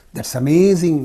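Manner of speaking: pitch drops through amazing. Demonstrating intonation for strong emotion: falling tone on amazing. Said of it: "Falling down".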